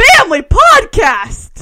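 booming, very loud, high-pitched yell. Cutting in with something to throw in: yelling. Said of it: "There's no need to yell that".

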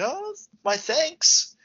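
put-on, very high-pitched, shrill yell. Retelling a story about a kid who gave a man directions: retelling a shout. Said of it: "And he just shouts".

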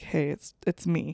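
soft, hushed whisper, close and low.

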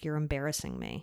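mumbled under the breath. Recounting a kid quietly answering a woman scolding him, murmuring. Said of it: "quietly sitting there and he like murmured something like".

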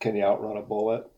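ordinary delivery

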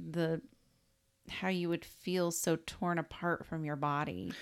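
ordinary talk, nothing marked

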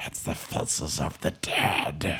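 whispered, very slow, soft and hushed. Recalling the Dead Marshes walk-through at a haunted house: Gollum whispering. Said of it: "you hear Gollum at just kind of whispering".

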